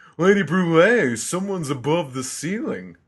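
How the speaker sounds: high-pitched, play-acted yell. Recapping a scene, voicing Diesel calling to Lady Brulee, retelling Diesel's shout. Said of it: "Shouted Diesel".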